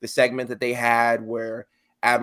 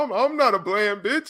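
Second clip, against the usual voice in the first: very high, cracking, breaking voice, stammered; 10 semitones higher than usual. Retelling a reply to an insult, imitating Roderick Strong's voice breaking. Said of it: "when his voice started breaking".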